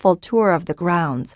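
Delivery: ordinary delivery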